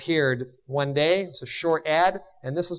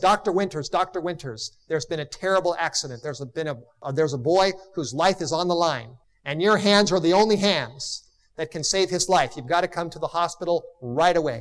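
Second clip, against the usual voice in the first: usual speaking voice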